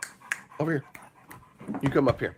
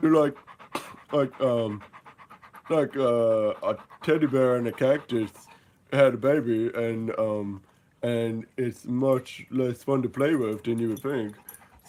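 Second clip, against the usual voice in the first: put-on pet puppy dog voice. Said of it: "That's my dog".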